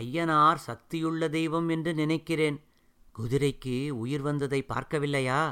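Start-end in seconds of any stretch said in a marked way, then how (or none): none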